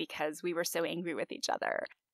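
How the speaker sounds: plain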